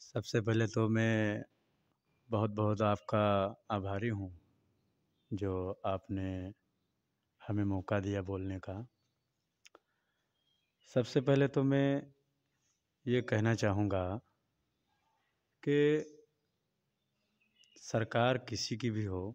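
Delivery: very soft, low volume, barely above a murmur.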